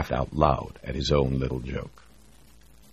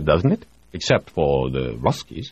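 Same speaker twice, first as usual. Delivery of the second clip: ordinary delivery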